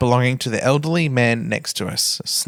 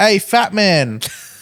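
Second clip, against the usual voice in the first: put-on child yelling, higher; 7 semitones higher than usual. Retelling what a son yelled on a train: imitating a child yelling. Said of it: "My son yells out".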